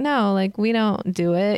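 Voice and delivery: sarcastic put-on delivery. Retelling an interview answer, imitating a sarcastic denial.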